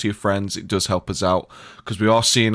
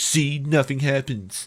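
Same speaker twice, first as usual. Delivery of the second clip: high, pitched-up, mocking, boastful tone; 5 semitones higher than usual. Joking that the boss drinks Clorox: Trump impression. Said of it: "he just drinks some fucking Clorox and says".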